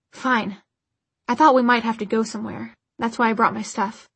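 ordinary talk

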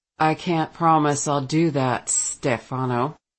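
icy, distant, cold, low-pitched delivery. Reading a story, a man answers another man as he leaves: cold.

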